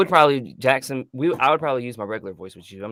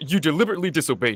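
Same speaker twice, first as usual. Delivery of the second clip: lead lion character voice; 4 semitones higher, 4 dB quieter than usual. Repeating the movie line when asked to do it again: Mufasa voice. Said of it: "Do that again".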